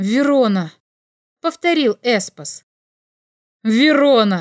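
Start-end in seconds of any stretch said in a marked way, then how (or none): 3.6-4.4 shouted, crying out. A man calls out a name after his companion repeats it, shouting. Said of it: "крикнул Ройд".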